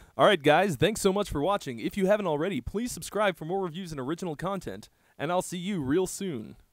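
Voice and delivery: put-on radio announcer voice, broadcast-booth delivery. Closing out a video of reviews, in a best radio voice. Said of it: "I'm going to do this in my best radio voice".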